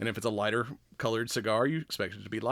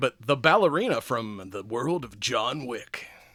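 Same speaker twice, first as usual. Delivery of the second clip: movie trailer announcer voice, slower; 3 dB louder than usual. Host introducing this week's movie topic in a movie trailer voice. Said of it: "my movie trailer voice".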